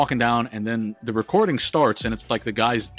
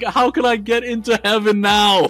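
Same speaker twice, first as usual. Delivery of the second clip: imitated man howling, higher and louder; 11 semitones higher, 7 dB louder than usual.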